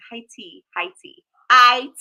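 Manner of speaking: high tea said with a put-on British accent. Repeating a phrase for viewers, in a british accent. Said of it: "high tea in the British accent".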